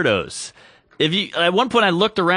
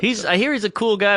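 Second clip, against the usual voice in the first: ordinary delivery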